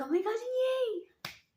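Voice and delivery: very high, squeaky excited squeal, last word dragged out. Showing how they sound when very excited, sounding like Mickey Mouse, excited. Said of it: "I sound like Mickey Mouse because I'm so excited".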